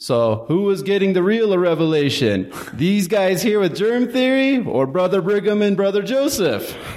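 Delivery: very high-pitched, bad fake Swedish accent. Imitating a lecturer's line from class, in a bad Swedish accent impression. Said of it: "had this really great like Swedish accent".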